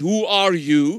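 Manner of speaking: put-on very heavy, thickly laid-on Russian accent. Retelling what a Russian woman serving him a meal asked, in a heavy Russian accent. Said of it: "she said with a heavy Russian accent".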